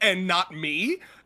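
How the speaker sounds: acted, loud, livid, indignant outburst. Imagining how a character reacts on finding out: imitating livid Eru. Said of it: "Eru would be fucking livid".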